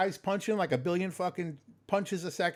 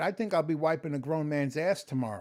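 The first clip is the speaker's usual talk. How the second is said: normal talking voice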